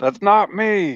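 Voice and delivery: very high, sudden yelling outcry. Playing a character who jumps up on hearing screams: yelling out. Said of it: "I jump up and yell out".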